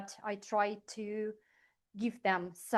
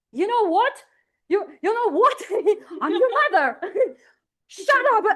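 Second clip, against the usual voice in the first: screaming, shrill, very loud, pitched-way-up shout; 12 semitones higher, 15 dB louder than usual. Retelling shouting at the people in the apartment: imitating own past shouting. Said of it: "shouting at them".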